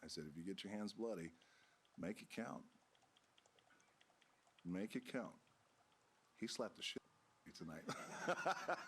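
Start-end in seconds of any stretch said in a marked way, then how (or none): 0.3-5.3 soft, hushed, urgent half-whisper. Retelling words once said to someone heading out: imitating own half-whisper. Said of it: "I whispered to him as he was going out".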